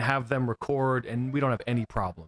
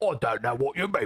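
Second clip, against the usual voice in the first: fake, put-on British accent. Telling the guest how they imagined him talking, put-on british accent. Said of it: "I thought you were British".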